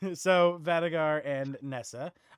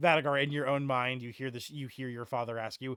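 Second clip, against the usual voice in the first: ordinary delivery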